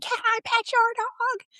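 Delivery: mock little-girl voice, very high-pitched screaming shriek. Retelling how a little girl ran up to the dogs: imitating a girl screaming. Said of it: "while she's screaming".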